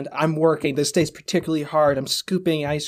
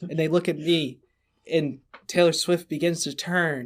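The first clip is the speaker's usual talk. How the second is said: ordinary talk, nothing marked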